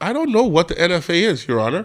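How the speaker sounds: ordinary talk, nothing marked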